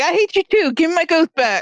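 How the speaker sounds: high-pitched shout, coming in quickly. Retelling what the character shouts while jumping in: yelling. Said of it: "she's yelling. She, she's just jumping in like".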